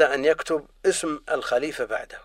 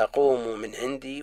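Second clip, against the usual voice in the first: usual speaking voice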